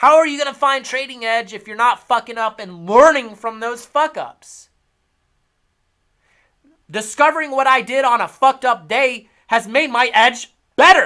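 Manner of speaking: shouting. Lecturing viewers about learning from trading mistakes, yelling. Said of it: "why are you yelling, fat cat?".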